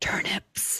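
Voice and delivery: whispering. Saying a single silly word into someone's ear: whispering. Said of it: "A little louder. Whisper louder".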